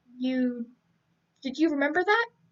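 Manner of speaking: ordinary delivery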